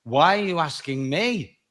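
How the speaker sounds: ordinary talk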